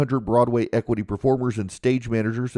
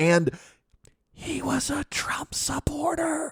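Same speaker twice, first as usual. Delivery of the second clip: hushed, secretive whisper; 3 dB quieter than usual. Retelling what she whispered about a guest brought to the house: retelling a whisper. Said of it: "and she whispered it".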